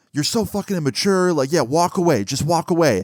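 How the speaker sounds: furious, angry, freaking-out rant. Retelling a woman freaking out as he turned to leave, imitating someone freaking out. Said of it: "she starts freaking out".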